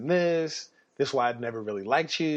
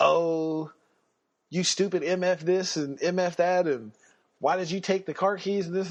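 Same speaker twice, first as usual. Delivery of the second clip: play-acted drunk voice, berating, yelling rant; 4 semitones higher than usual. Retelling how a drunk friend yelled about the car keys: imitating someone yelling. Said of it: "he starts yelling at me".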